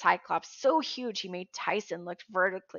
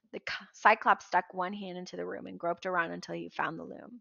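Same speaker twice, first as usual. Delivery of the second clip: plain reading voice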